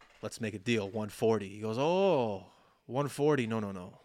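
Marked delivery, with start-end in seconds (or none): 1.8-3.8 put-on Indian accent. Retelling a phone shop seller's reply to a haggled price, in a put-on indian accent. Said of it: "Am I doing an accent? He's from India".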